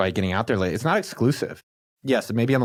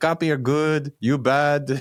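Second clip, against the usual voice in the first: unsure attempted Israeli accent, much higher pitch; 4 semitones higher than usual. While talking about voicing your dad in an audiobook, try an unsure put-on Israeli accent. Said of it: "I don't know how to do an Israeli accent".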